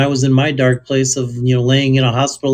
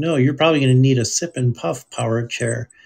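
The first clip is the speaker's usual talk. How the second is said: usual speaking voice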